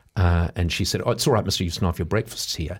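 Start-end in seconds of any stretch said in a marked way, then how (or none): none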